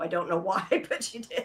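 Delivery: speaking while cracking up laughing. Explaining that Siri on the phone just answered the other speaker, laughing while talking. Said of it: "I'm laughing 'cause Siri just responded".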